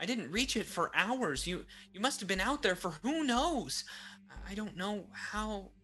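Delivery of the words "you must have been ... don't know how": stammered, halting, broken-up words. A woman gazes down at the Suli before her and speaks, stuttering. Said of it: "She stuttered".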